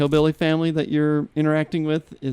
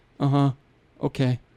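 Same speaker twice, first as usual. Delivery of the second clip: put-on emotionally dead voice. Retelling how the game character greets his missing wife: imitating an emotionally dead reply. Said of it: "emotionally dead".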